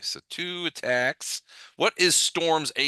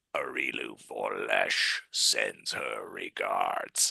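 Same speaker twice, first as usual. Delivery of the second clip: ugly, very low, rough, rasping alien voice; 6 dB quieter than usual. Narrating as double doors open and a voice speaks; ugly alien voice. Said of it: "an ugly voice, an alien voice say".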